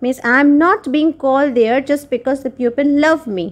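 ordinary delivery

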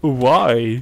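the word "why" said loudly and stretched long. Doing a terrible Christopher Walken impression while playing: terrible Christopher Walken impression. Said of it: "my terrible Christopher Walken impression".

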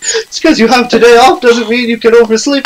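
put-on nagging, scolding mother voice. Voicing the mother while playing through a game's dialogue, mother's voice. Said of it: "Mother's voice".

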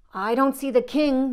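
high-pitched, grumbling, muttered. Henny Penny, in Foxy Loxy's dark den, speaks: muttering. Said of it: "muttered Henny Penny".

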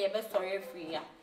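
plain

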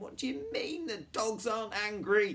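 very loud, very high-pitched, shrill yell. In a read story, a character yells back after being told something: yelled. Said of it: "yelled Jonathan".

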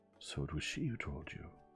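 gentle, mild, kindly, low and soft. The detective answers the man he is questioning, gentle. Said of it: "Poirot said gently".

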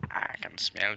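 very low, deep, bass-heavy delivery. Showing another player how to say the line: deep voice. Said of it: "deep voice go".

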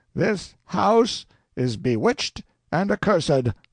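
booming, thundering preacher voice, very high. Narrator voicing Father Adolf addressing the household, thundering in his great voice. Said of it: "Then Father Adolf rose up, flushed and excited, crossed himself, and began to thunder in his great voice".

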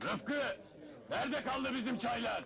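calling out loudly. Calling out to the man who brings the tea: shouting. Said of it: "Ne bağırıyorsun şişman?".

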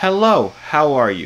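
trying out a practised American accent. Asking the group whether their american accent is good, the speaker tries an american accent. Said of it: "can you guys tell me if my American accent is good".

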